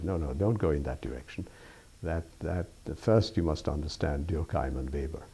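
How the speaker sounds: ordinary talk, nothing marked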